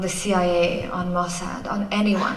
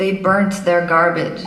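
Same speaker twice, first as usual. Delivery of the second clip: put-on American accent; 5 dB louder than usual. The speaker quotes what foreign news presenters declared; american accent. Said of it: "that was my American accent".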